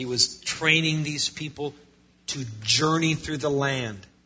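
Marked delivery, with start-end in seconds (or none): 2.3-4.0 journey stressed with a falling tune. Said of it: "I, I emphasize that word".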